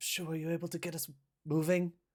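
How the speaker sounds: hushed whisper. In a role-play scene, Ray Ray speaks over to Shu, whispering. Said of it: "Ray Ray just sort of whispers over to Shu".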